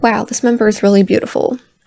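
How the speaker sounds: plain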